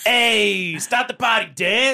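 gruff New York accent, very high, drawn out, slow. Taking a turn at the opening line: rough New York accent. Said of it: "rough, like, New York".

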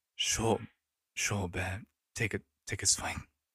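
sighing in exasperation. Narrating, a character turns to his good friend and answers with an exasperated sigh. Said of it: "with an exasperated sigh, he just goes".

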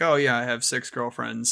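ordinary delivery

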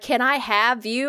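slow, drawn-out, creepy vampire voice. Retelling what a performer asked: imitating a creepy vampire. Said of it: "creepy vampire, like, bullshit".

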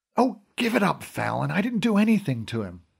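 hushed half-whisper, voice kept down. Answering Brendan's accusing question at Dad's bedside, trying to half-whisper. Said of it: "trying to whisper".

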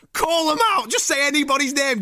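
urging, calling-out delivery.

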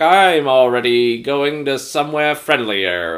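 slow, mocking villain taunt. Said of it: "voiceover from Kane, taunting them".

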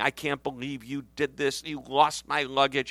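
mock irate, angry complaining yell. Retelling a traveler's complaint at the baggage office: imitating someone yelling. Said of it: "They were yelling".

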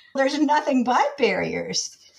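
blurted out while laughing. Retelling an artist's answer to an interview question, laughing as he blurted it out. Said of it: "he just started laughing and blurted out".

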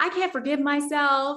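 mock weeping, high, tearful crying voice. Retelling sitting in a car after church, imitating own past crying. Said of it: "I'm sitting in his car after church and I'm crying".

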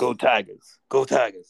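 rough, scratchy, creaky put-on character voice. Showing the other speaker an Ed Orgeron voice. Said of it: "my Ed Orgeron voice".

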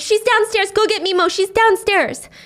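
high-pitched, desperate, pleading screaming. Retelling a show's scene where a grandmother fights off an attacker: imitating someone screaming. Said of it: "she's screaming".

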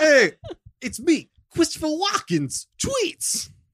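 very high voice with big swooping pitch. Joking about a celebrity's tweets: Frank Caliendo's Christopher Walken impression. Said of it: "That's you impersonating Frank Caliendo, impersonating Christopher Walken".

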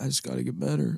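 put-on tearful voice, on the edge of crying. Imitating a quarterback at the podium who looks about to cry: imitating Mac Jones near tears. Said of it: "He looks like he's gonna cry".

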